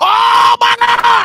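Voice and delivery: screaming. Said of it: "Whatever you just screamed out".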